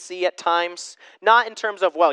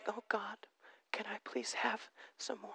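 breathy, timid, trembling, fearful pleading whisper; 2 semitones higher, 24 dB quieter than usual. Showing how not to approach God in prayer: mock trembling fearful plea. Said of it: "I don't have to be trembling and, and fearful".

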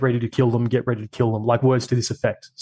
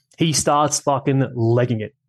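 ordinary delivery

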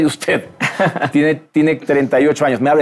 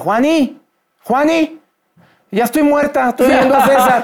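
put-on shouting, higher; 10 semitones higher than usual. Retelling how a bedridden woman heard his voice on audio: imitating María shouting. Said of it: "Y empieza a gritar".

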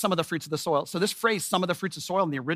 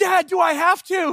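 put-on very slow, high, drawn-out weepy crying plea; 12 semitones higher, 7 dB louder than usual. Retelling a family story, a father quotes his son's words to him: imitating his son crying. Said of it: "he's just crying and crying".

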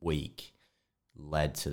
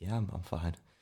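mock nervous, stumbling, unconvincing delivery; 4 dB quieter than usual. Retelling an answer to a coach before a routine: imitating an unconvincing "i'm fine". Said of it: "I could tell you were fine with the way you said that".

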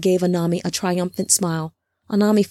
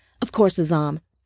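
usual speaking voice

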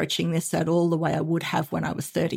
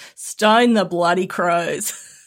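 put-on Australian accent, louder; 7 dB louder than usual. Offering a favourite Australian expression: real Aussie accent. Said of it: "my best real Aussie accent".

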